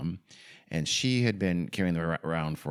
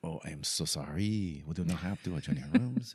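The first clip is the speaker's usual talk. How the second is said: bad, terrible put-on French accent; 4 dB quieter than usual. Telling a hotel story, speaker voices the manager: terrible French accent. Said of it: "in my terrible, terrible French accent".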